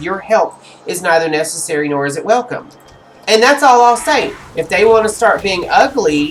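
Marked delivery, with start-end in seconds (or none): none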